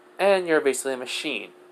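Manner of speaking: normal talking voice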